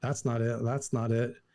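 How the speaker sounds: plain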